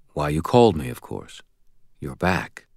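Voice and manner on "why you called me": plain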